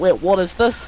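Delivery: normal talking voice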